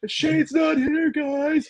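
high-pitched, slow announcer voice. Speaker mocks how he sounds doing announcements: Tony Khan announcement voice. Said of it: "when he's doing, like, announcements".

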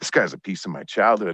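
normal talking voice

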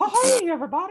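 put-on high cartoon mouse voice. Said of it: "a pretty good Mickey Mouse voice".

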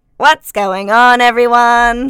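very loud, strange, alien-sounding voice. Trying to imitate a co-host's greeting, it comes out as an alien-sounding voice. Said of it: "That sounded like an alien".

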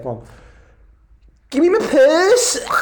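put-on Liverpool accent, very high, very loud, swooping. Doing one more take to show off your accents, in a Liverpool accent. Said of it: "I'm good at my accents".

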